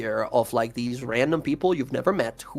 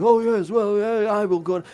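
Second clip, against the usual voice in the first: put-on high, elderly elf character voice; 8 semitones higher, 4 dB louder than usual. Voicing an old elf who excuses himself and leaves: old elf voice. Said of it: "and this old elf, like".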